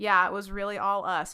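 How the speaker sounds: loud, tongue-in-cheek sarcastic tone. Recounting a scene, quoting two characters' sarcastic reply, retelling a sarcastic reply.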